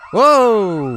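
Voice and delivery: sudden high, loud startled scream.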